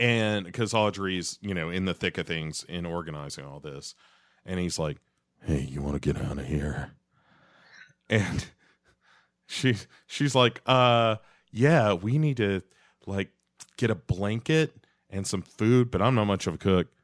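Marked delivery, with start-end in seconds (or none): 5.4-6.9 creepy character voice, lower and quieter. Voicing John Justice Wheeler strolling up during the organizing, in a creepy voice. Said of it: "It's such a creepy voice".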